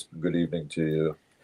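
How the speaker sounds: deep, smooth, mellow, soft, well-modulated voice. Performer demonstrating the greeting he uses as a clown: deep, mellow, well-modulated voice. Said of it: "deep and, you know, mellow, well modulated voice".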